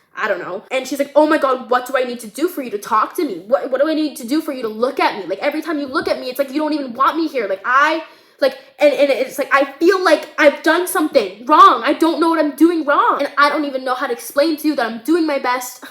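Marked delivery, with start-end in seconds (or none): 1.1-15.8 loud, hysterical screaming outburst. Acting out what a girl screamed during an emotional release: imitating someone screaming. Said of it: "The way that I'm screaming at you".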